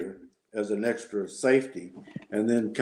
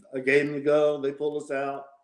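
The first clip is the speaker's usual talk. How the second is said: plain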